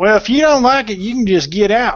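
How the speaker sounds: heavily laid-on mock Southern accent. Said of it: "get rid of that accent".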